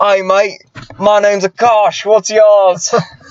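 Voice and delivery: put-on broad, thick Australian accent, high and very slow. Retelling how a guy introduced himself, in Akash's thick Australian accent. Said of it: "with a thick Australian accent".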